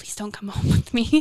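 muttering under breath. Retelling a remark made at the spirit box: imitating muttering under breath. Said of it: "I said under my breath".

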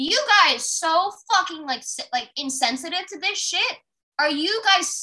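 furious, stumbling, loud and high enraged scream. Retelling confronting people on a train who did nothing: imitating screaming at passengers. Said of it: "I literally screamed the whole train down".

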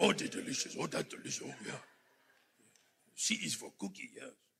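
very quiet, whispered, breathy, savoring monster voice. A preacher mimics a listener's noises of approval, in a Cookie Monster voice. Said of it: "Sound like Cookie Monster".

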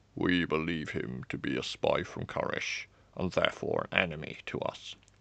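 deep, hushed voice of a royal guard. Narrator listening at the doors reads a guard reporting to the king: deep voice. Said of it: "A guard spoke. ... The deep voice continued".

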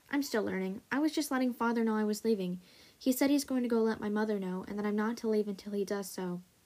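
usual speaking voice

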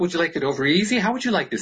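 mock doting, high, laughing, mock-polite voice.

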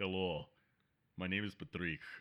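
put-on deep, soft, low voice with Russian accent. Imagining a Lean Pockets mascot who walks in, as Patrick in a Russian accent. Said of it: "it's this Russian dude that just walks in".

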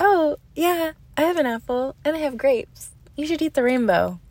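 high, loud, sugary voice. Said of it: "And I was like".

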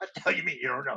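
quiet, mock-outraged, furious, disbelieving tone. Retelling what he said to a voice that had no answers, retelling a furious outburst. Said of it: "And I was just furious".

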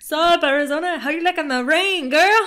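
put-on Mexican accent. Speaker addressing Arizona, Mexican accent. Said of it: "Why did he sound Mexican?".

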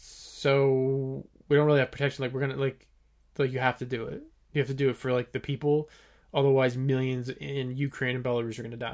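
normal talking voice

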